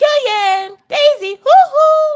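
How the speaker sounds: very high, very slow "hoo hoo" calling sound. Retelling how Orion calls the dogs instead of whistling: imitating Orion calling the dogs. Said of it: "whenever he calls the dogs, he goes".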